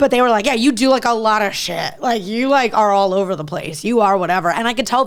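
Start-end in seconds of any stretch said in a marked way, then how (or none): 0.5-4.5 backhanded, needling, snide passive-aggressive tone. Retelling someone's negative comment about doing a lot: imitating a passive-aggressive tone. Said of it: "the tone was kinda like".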